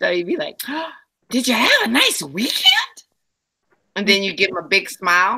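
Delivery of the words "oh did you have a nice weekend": high, exaggeratedly excited voice. Acting out greeting people with a big smile, mock overly excited, high-pitched. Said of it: "that high pitched, overly excited voice".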